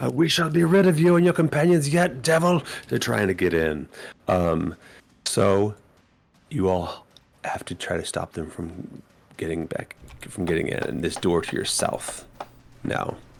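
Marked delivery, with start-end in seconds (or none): 0.1-2.6 shrill, very high, loud shouting in a monk voice. Voicing a monk shouting through the doors at the party: monk shouting. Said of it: "as you hear a monk shout".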